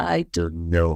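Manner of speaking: very low, ghostlike voice. Speaker retells how he answered people at the shows, in a low ghostly voice. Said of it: "like a ghost, I would reply in a low voice".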